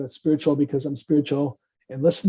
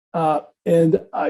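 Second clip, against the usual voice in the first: normal talking voice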